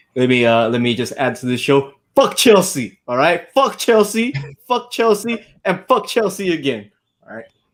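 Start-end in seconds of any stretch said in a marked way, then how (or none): 2.2-7.0 heated, worked up rant, much higher. Arsenal fan on the show after Arsenal beat Chelsea, worked up rant. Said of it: "Let me calm down now".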